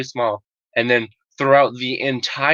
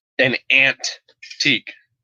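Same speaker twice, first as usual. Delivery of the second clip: mocking an odd pronunciation of antique. Mocking how someone says a word: mocking his pronunciation of antique. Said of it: "I'm just mocking the way he says".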